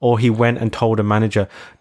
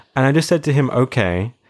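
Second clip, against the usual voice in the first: usual speaking voice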